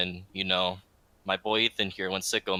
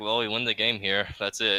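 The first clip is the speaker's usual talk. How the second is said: ordinary delivery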